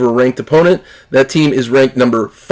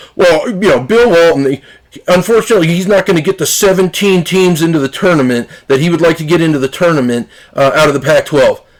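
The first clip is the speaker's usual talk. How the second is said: play-acted, derisive, mocking TV sports pundit delivery; 3 semitones higher than usual. Retelling an analyst's answer about Bill Walton: imitating Joe Lunardi mockingly. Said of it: "just mockingly goes".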